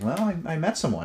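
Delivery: very high, giggling through the words. Retelling Dad's reply about meeting someone: imitating a giggling reply. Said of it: "he starts laughing, like, in a giggling kind of way".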